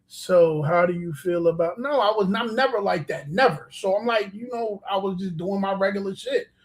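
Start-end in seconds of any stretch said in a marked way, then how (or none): 0.1-1.7 low, flat, dull monotone drone, no tune. Picturing someone asking a question in an interview, flat monotone. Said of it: "Nobody sits in an interview monotone like".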